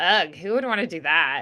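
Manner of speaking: tone of clear disapproval, disapproving ugh. Illustrating the disapproving inflection someone used: disapproving tone. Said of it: "it was like disapproving of the first. It's like".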